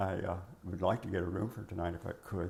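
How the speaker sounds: ordinary delivery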